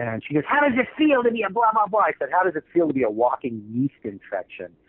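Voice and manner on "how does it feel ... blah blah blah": high, yelled, jabbing shout. Retelling what a woman yelling at the speaker said, retelling a woman yelling. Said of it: "started yelling at me".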